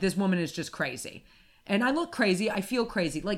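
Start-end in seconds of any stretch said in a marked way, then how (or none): none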